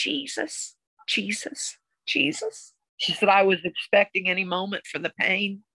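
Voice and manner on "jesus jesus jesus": murmured under the breath, whispered. Retelling what a woman said she did while expecting the pain, murmuring under breath. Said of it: "under my breath".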